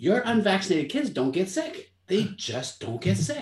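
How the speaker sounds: firm, emphatic, adamant. Acting out what a man insisted to the speaker, adamantly. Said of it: "he's so adamant".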